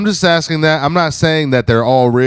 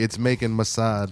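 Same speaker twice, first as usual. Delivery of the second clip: very soft, hushed, fake put-on Jamaican accent; 3 semitones lower, 11 dB quieter than usual. Speaking to the group, switching into a put-on jamaican voice. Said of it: "in my Jamaican voice only".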